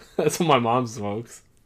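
plain

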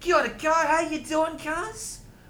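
high-pitched put-on Maori accent. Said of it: "I can do a Maori one".

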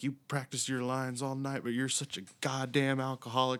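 play-acted, high, screaming, ranting yell. Retelling how he flubbed lines and went back to the trailer, retelling screaming at himself. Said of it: "starts screaming at himself".

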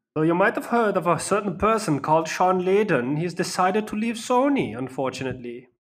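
odd, sudden German accent. Kicking off the news for the episode, in a weird german accent. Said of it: "What's with the weird German accent".

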